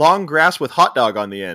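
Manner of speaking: ordinary talk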